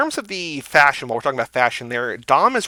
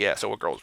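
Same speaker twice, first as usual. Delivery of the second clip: low, quiet mutter under the breath; 6 semitones lower, 7 dB quieter than usual. Retelling a character's line from a scene: imitating someone saying it quietly under his breath. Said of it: "He says it very quietly and sort of under his breath".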